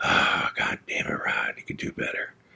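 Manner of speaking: muttered under breath. Retelling how dad scolded himself in the garage: imitating dad muttering under his breath. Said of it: "kinda talking to himself under his breath".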